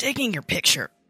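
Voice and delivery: high, loud wheezing, straining for breath. Just fallen to the floor, answering a little girl's question about the camera, wheezing. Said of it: "I say, wheezing".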